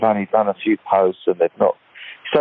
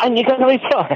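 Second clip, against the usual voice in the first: put-on angry, fired-up child voice, pitched higher. Retelling how the kids react to stuff posted online: imitating angry, fired-up kids. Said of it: "And they're all fired up".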